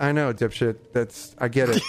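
plain

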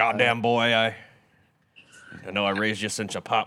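put-on gruff fatherly voice. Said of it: "It's a good impression".

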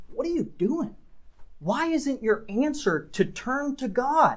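acted exasperated pleading. Speaker voicing Elisha's question to the listeners, acting out an exasperated tone. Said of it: "Notice the almost exasperated tone".

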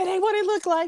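startled, panicked, laughing.

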